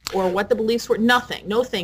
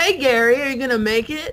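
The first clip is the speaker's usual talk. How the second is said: hostile, snide, sarcastic needling tone, acted out; 4 semitones higher than usual. Speaker recalls how she talked to Gary on the trip, mock-sarcastic retelling. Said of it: "I was really sarcastic with you on the trip".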